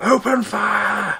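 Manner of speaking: shrill, booming, very loud high yell, last word stretched. Voicing a character giving the order to attack the party: shouting. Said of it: "pulls Thunder to one side and shouts".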